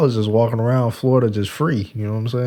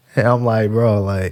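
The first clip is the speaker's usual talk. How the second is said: normal talking voice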